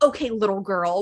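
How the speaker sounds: put-on condescending delivery. Retelling an argument between two women, imitating a condescending tone. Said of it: "so condescending".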